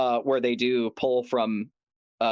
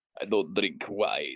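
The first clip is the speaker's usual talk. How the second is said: put-on low-pitched, vampire-style Eastern European accent; 5 semitones lower, 4 dB quieter than usual. Quoting a vampire line in a bass-boosted eastern european accent. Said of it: "Eastern European accent".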